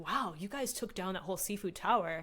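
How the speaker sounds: plain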